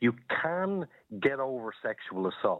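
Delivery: "can" stressed with long falling tune. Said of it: "putting the emphasis on the word can".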